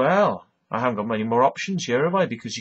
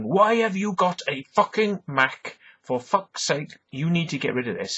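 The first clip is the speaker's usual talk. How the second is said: high, furious, raging screaming yell; 5 semitones higher than usual. Retelling yelling at someone whose Mac deleted photos, retelling screaming blue murder. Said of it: "I'm screaming blue murder to this person saying".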